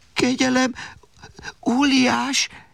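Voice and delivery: shaky, trembling, quavering voice. Held up before the giant's nose, Alexander pleads with him; trembling voice. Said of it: "tette hozzá remegő hangon Alexander".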